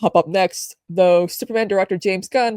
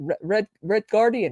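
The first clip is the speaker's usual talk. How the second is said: clumsy, unconvincing put-on Russian accent; 3 dB quieter than usual. Retrying the name with a russian accent after a botched first try: bad russian accent. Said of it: "that's not a Russian accent. I suck".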